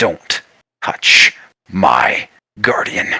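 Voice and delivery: crazed, enraged, menacing, very slow, words very drawn out. Voicing a character who holds a player off the ground: mad with rage and insanity. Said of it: "is now mad with rage and insanity".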